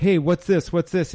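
put-on calling out in a man's yelling voice. Speaker retelling a bar comedian's joke yelled at the waitress, imitating a man yelling. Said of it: "yells at the waitress like".

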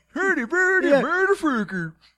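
fake Swedish-sounding gibberish voice. Voicing Hans Gruber after a suggestion to play him as the Swedish Chef: Swedish Chef voice. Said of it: "the Swedish Chef is for Hans Gruber".

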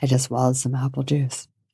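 put-on seductive voice. Joking around on a recording, the speaker shows off a seductive voice. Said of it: "that's my seductive voice".

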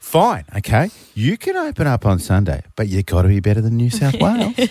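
put-on creepy motherly voice with swooping pitch. Acting out what she is essentially saying, in a creepy mum voice. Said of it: "Why do you sound so creepy when you're being a mum".

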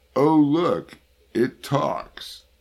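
very high, loud, drawn-out, exaggerated mock sarcastic jeer. Retelling a bus driver's reply to a young man asking for a transfer: mimicking exaggerated sarcasm. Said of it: "replied in an exaggeratedly sarcastic tone".

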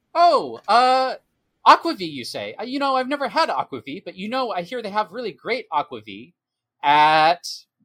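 very loud, high-pitched announcement-style voice. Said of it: "he's gonna say very loudly".

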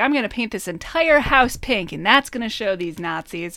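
ordinary talk

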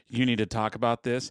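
ordinary delivery

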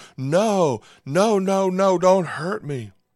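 put-on very slow, high, loud, drawn-out screaming child voice. A father recounts holding down his young daughter, imitating a child screaming. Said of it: "while she screamed".

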